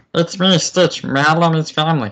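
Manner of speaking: loud, very high-pitched, belted cartoon alien voice. Asked about Stitch, the speaker offers to do a voice: Stitch voice. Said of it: "I could kind of do a Stitch voice".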